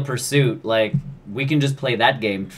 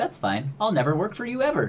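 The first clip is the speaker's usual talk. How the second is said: pitched-up, high, swooping comeback tone; 7 semitones higher, 4 dB quieter than usual. Joking about a celebrity being turned down by a studio: imitating Steven Spielberg. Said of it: "Steven Spielberg's like".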